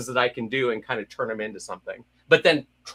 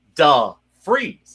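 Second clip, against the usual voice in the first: raised, badly acted hammy actor voice; 3 semitones higher, 7 dB louder than usual. Show how you started out on the first line, with a bad Shatner impersonation. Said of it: "I started doing a bad Shatner impersonation".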